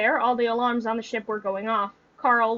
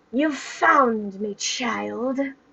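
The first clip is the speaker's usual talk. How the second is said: menacing, hissing put-on villain voice. A narrator voices the hybrid speaking from behind Jen, in a hissing voice. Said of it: "a hissing voice sounded behind them".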